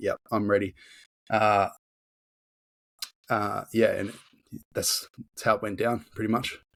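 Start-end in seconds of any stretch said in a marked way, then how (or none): 0.0-0.7 put-on smug, self-assured tone. Retelling own past words before a competition: imitating smug confidence. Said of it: "almost smugly confident on that day and just being like".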